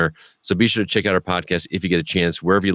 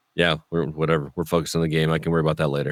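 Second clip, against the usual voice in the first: rushed, rattled off, totally unexcited; 3 semitones lower, 4 dB quieter than usual. Imitating the coach in a post-game interview, not excited: Bill Belichick impression. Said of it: "just to see him being Belichick with".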